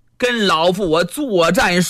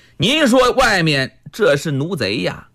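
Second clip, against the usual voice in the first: ordinary delivery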